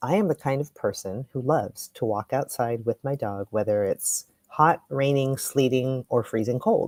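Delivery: normal talking voice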